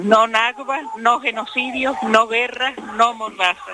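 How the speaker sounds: ordinary talk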